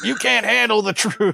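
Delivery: high, belted mock movie-style dramatic yell.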